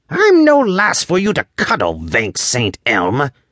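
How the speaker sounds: high-pitched angry growl with big pitch swoops. Narrating a story as the elf resists being carried like a child, Thorn's high-pitched growl. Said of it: "he growled in his high-pitched voice".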